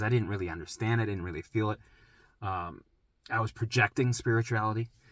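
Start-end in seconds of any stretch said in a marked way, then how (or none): none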